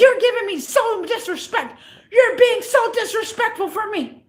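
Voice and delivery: high, furious, heated angry yelling. Recounting an argument, acting out the man who was yelling at them: retelling his angry yelling. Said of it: "you're the one that's screaming all".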